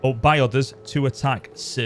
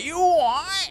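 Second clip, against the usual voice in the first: very high-pitched Cockney geezer voice. Saying the ogres all sound Cockney, the speaker demonstrates a Cockney geezer accent. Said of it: "Cockney geezer".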